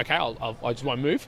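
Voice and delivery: ordinary talk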